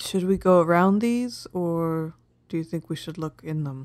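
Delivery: speaking softly. Asking the party in character whether to search the ruins, asking quietly. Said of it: "I'm gonna really quietly ask".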